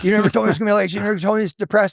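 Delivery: high, yelling, accusatory outburst. Retelling a story where Mike starts yelling: imitating Mike yelling. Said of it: "he starts yelling at me".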